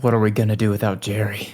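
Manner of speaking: low muttering under the breath, as if to oneself. Character watching Jerry fight off three attackers, muttered under breath. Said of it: "I just say under my breath".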